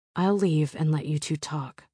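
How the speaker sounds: ordinary delivery, nothing marked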